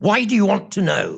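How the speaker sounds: hostile, confrontational, very aggressive voice. Retelling a phone call, quoting the lady who answered: imitating a very aggressive voice. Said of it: "she said in a very aggressive voice".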